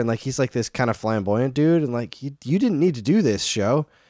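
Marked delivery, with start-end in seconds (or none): 2.2-3.8 loud, high, mad, exasperated, fed-up rant. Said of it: "made me mad".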